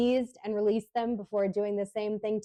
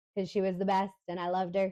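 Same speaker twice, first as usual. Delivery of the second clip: usual speaking voice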